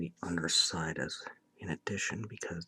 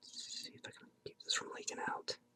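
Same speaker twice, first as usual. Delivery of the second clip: speaking in a whisper. Doing a quick bit of shading on the teeth, whispering. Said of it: "I keep whispering so much in these videos".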